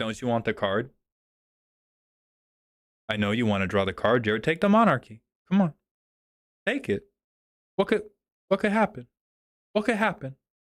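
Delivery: put-on wheedling, coaxing, tempting, teasing tone. Acting out looking an opponent in the eyes: put-on coaxing taunt. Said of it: "Look somebody in the eyes like".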